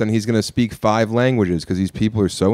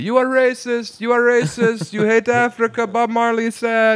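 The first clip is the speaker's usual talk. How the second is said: mock piercing, very high-pitched, shrill holler; 12 semitones higher than usual. Retelling how a man yelled down an alleyway: imitating someone yelling. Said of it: "he just yells down this alleyway".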